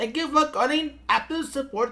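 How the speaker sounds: put-on Indian accent. Acting out a phone support agent answering a call: put-on Indian accent. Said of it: "I could do an Indian accent".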